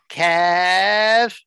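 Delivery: high, drawn-out, stretched-out calling. Explaining who calls him Kev, imitating mom saying his name. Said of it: "That's what she says".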